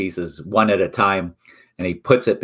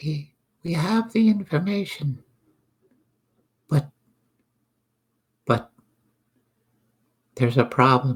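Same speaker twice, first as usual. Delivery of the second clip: hushed, higher, kept-down confiding tone; 6 semitones higher than usual. Game master voicing a character confiding a problem to the party, in a lowered voice. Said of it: "he'll lower his voice a bit".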